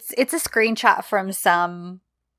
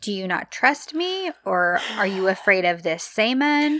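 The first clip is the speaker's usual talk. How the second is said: ordinary talk, nothing marked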